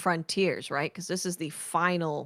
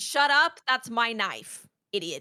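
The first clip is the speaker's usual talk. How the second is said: put-on sassy yelling voice, higher-pitched; 5 semitones higher than usual. Retelling how Eris snaps at Oryx in the game: imitating Eris sassy yelling. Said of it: "Eris is very sassy and yells at Oryx".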